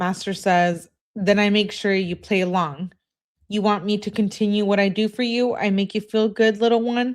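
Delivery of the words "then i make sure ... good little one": ordinary talk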